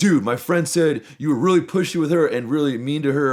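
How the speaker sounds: high-pitched, confronting yell. Retelling a guy confronting them in the kitchen at a party: imitating someone yelling. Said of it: "he starts yelling at me".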